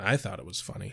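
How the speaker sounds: mock deadpan delivery. Quoting Angel's reply to Cordy, retelling a deadpan line. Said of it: "And Angel deadpans".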